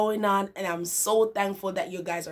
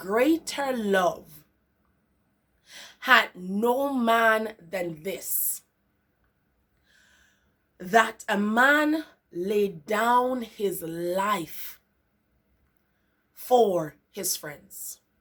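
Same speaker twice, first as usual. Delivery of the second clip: very slow, drawn-out reading. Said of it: "I'll read it very, very, um, very slowly".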